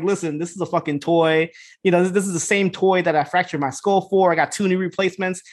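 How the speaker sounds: ordinary talk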